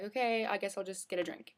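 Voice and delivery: ordinary talk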